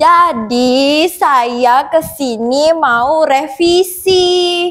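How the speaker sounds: very slow speech, every word stretched out. Asked to speak slowly, saying they came for a revision: speaking too slowly. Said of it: "terlalu pelan".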